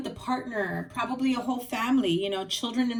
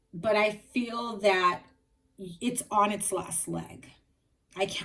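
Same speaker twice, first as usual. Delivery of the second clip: choked-up voice, catching and breaking with emotion. Telling a listener their on-and-off relationship is on its last leg, choked up. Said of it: "I'm choked up".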